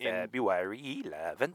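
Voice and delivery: put-on Swedish-tinged accent. Giving a norwegian musician's birth date, the speaker says it in a swedish accent. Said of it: "That's my Swedish accent".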